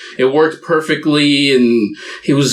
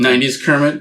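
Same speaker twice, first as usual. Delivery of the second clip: ordinary delivery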